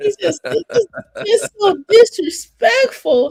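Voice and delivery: fake whimpering. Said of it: "You have me up here crying".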